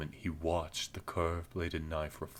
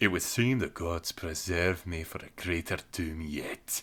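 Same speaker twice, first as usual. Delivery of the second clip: amused, amusement creeping into the words; 4 dB louder than usual. Narrator reading a dwarf's remark as he grins, said with a grin. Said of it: "The dwarf was trying to hack his way toward the heart of the stone circle. / The ferocious energy of the dwarf was terrible to see. He frothed at the mouth and ranted as he chopped, / He raised his ax".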